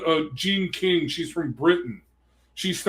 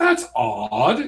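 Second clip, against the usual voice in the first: put-on British accent, stretching the word odd; 4 semitones lower than usual. Retelling a woman's reaction at feminist meetings: British accent. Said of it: "in a British voice".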